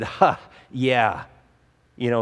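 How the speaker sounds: kind of mocking, half-laughed, laughing it off. Retelling their own past reply to someone's earnest question, retelling a mocking reply. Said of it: "kind of mockingly".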